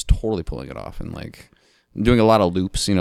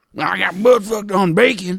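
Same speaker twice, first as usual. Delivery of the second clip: put-on old man voice, much higher, louder; 13 semitones higher, 4 dB louder than usual. Giving the character Billy his line in a grizzled old man accent. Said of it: "a grizzled old man accent that you just gave B- Billy right there".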